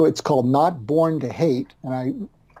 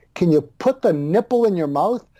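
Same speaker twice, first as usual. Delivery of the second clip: put-on scolding yell, held back; 3 semitones higher than usual. Acting out an imagined mother speaking to her newborn: imitating mother yelling. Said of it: "And she's yelling at me".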